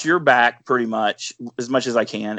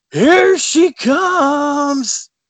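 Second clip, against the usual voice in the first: very high, loud scream with drawn-out "comes"; 5 dB louder than usual. Retelling a hunting partner calling out in quiet woods: imitating someone screaming. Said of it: "why are you screaming?".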